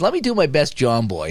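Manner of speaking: plain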